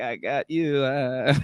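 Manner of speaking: very slow, mocking, taunting voice with laughter. Retelling a deleted scene where Luke laughs at Rey: imitating Luke laughing. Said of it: "laughing at her, like".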